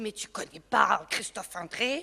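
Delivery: put-on Belgian accent.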